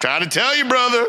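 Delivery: voice pushed way up high. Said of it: "he doesn't talk like that".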